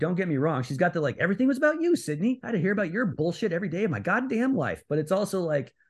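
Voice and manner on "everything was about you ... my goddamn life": plain, matter-of-fact, deliberate-sounding, pitched slightly up. Quoting a film line to fellow hosts, imitating Emma Roberts, matter-of-fact. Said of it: "how matter-of-factly she goes".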